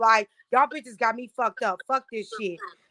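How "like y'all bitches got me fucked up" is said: ordinary talk, nothing marked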